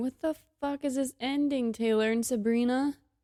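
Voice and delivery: crying speech. Reacting to the end of the album's last track, crying while talking. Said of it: "And I'm crying again".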